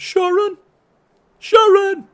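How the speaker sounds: high, loud rock-star style yell.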